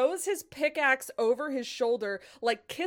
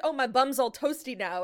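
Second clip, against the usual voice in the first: normal talking voice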